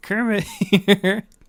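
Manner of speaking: loud, high-pitched squeaking voice. Joking that a guest has arrived: Kermit the Frog voice. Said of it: "Kermit's here?".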